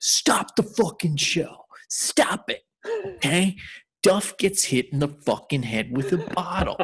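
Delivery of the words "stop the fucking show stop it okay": mock furious, high-pitched, animated burst of anger. Retelling how a man stopped a show: imitating an angry man. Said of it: "does not match his anger".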